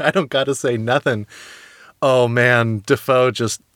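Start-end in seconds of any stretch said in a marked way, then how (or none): none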